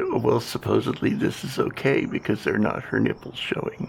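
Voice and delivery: ordinary talk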